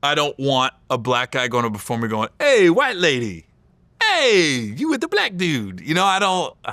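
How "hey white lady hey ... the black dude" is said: put-on comedian voice, high and swooping.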